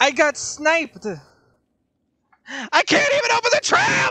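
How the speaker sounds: shrill, very high, loud, frantic, agitated shouting. Getting sniped during a game: agitated yelling. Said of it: "Calm down".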